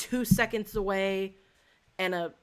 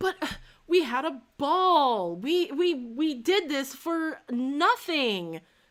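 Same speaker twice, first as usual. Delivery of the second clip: high, swooping, mock whiny sing-song complaining; 7 semitones higher than usual. Retelling how a man got a little whiny at one point, imitating a whiny complaint. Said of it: "got a little whiny and was like".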